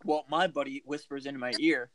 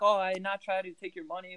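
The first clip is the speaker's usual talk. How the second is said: put-on French accent, pitched higher; 6 semitones higher than usual. Retelling what a French-speaking kid from Montreal said once caught, imitating a French accent. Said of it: "he speaks French. And he's got that bullshit accent".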